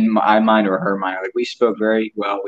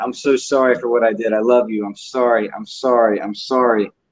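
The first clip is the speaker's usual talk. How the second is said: mock pleading repeated over and over, then a scream; 2 semitones higher than usual. Recalling holding him and apologizing to him over and over, retelling a scream. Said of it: "And I'm just screaming there".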